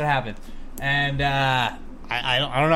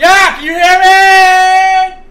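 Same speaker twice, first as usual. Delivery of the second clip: yelling, much higher and louder; 17 dB louder than usual. In a blizzard scene, one character calls out to another, yelling. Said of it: "Why are we yelling?".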